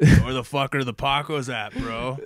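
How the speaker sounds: very loud, brash bro voice. Retelling what the co-host's brother said while visiting: imitating the co-host's brother. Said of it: "that's more what he sounds like".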